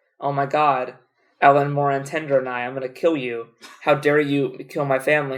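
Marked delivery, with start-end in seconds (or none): none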